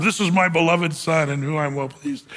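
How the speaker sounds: ordinary delivery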